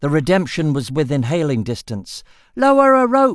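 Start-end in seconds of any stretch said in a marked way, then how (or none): 2.5-3.4 loud, high-pitched shout. Swimming toward a ship within hailing distance, he calls up to it, shouted. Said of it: "he shouted".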